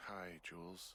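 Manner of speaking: drowsy, tired, sleepy just-woken voice. Just out of bed and answering the radio, greeting Jules in a tired voice. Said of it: "you sound tired".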